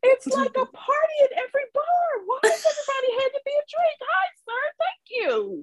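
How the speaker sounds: very high-pitched, overwhelmed, bewildered crying shout. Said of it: "I was like".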